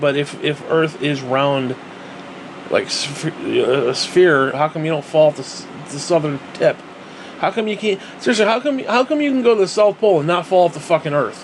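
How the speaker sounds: sarcastic, feigned seriousness.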